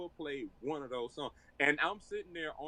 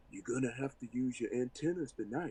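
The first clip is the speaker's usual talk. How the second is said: imitated whispering; 3 semitones lower than usual. Retelling a remark made with a hand against the mouth: imitating someone whispering. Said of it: "he put his hand against his mouth like he was whispering to me".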